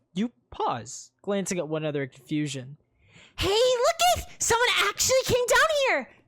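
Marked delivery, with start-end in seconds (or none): 3.3-6.0 put-on very high, bubbly girlish voice, shouted. Game narrator voicing a girl who spots the party below, bubbly girl's voice shouting. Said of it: "A bubbly girl's voice shouts".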